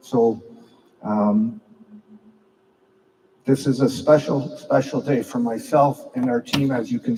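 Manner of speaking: choked-up voice catching with emotion. Hockey team captain addressing players on a special day, choked up. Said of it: "as I'm getting choked up".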